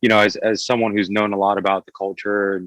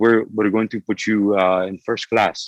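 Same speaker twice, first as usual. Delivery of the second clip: put-on broken English accent. Retelling what a man said to them, in a broken English accent. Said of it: "in this very broken English accent".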